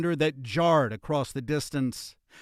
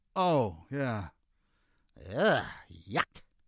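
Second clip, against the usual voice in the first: low, slow, revolted disgusted grunt; 4 semitones lower, 5 dB quieter than usual. Reading a story aloud, voice the Persian man's grunted reply. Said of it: "The Persian lurched up, / he grunted".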